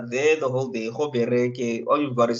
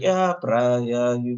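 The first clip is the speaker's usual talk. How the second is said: put-on deadpan, bone dry, zero excitement, utterly unbothered. Talking about a woman on a TV show, imitating her deadpan voice. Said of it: "her deadpan voice".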